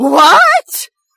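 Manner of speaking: very high, shrill, loud, squeaky yelp. Reading a story aloud, a woman woken suddenly answers: squeaking. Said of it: "She squeaks out".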